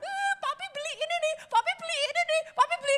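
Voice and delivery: put-on very high, gushing, excited little-kid chatter. Comparing two children given toys, the speaker acts out the expressive one: excited child voice. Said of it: "jingkrak-jingkrak lompat-lompat".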